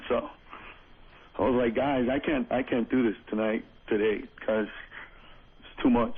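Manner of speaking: low, drowsy, half-asleep voice. Explaining to the guys why they can't do this today, sleepy voice. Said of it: "you sound very sleepy".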